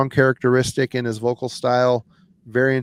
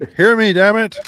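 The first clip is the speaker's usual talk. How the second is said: playful, loud, high-pitched jokey shouting; 8 semitones higher, 5 dB louder than usual. Joking about typing in all caps, playful mock yelling. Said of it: "I'm yelling".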